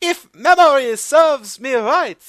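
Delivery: voice shot very high, very loud. Mocking how the chairman spoke in New York, in the Iron Chef chairman's very high voice. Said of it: "why did your voice go up 4 octaves?".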